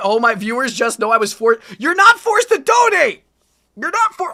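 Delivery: barely held-back yell. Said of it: "I'm trying not to yell".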